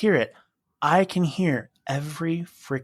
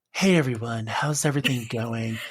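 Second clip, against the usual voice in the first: gentle, soft-spoken, low zen tone; 4 semitones lower than usual. Describing a study channel's hosts, imitating their greeting in a soft zen voice. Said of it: "talk in this really soft voice".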